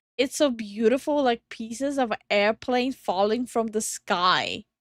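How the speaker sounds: ordinary delivery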